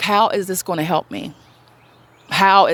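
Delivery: play-acted, mild, anguished, half-shouted crying out. Retelling screaming at a friend, imitating own screaming. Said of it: "I was just screaming at her".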